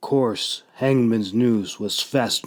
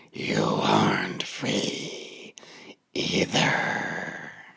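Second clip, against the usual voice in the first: raspy, chortling whisper under the breath; 13 semitones lower, 6 dB quieter than usual. Reading the story, the narrator voices the shade's reply to the captive in Fowler's raspy, chortling voice. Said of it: "responded with a raspy, chortling voice".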